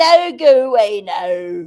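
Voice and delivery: loud, very slow, put-on Scottish accent. Retelling how a man ends his talk, in a put-on Scottish accent. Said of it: "however you do it in Scottish".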